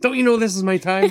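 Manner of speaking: put-on, rather angry, very high-pitched voice. Retelling a man finally answering repeated morning calls, retelling an angry answer. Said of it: "in a rather angry tone".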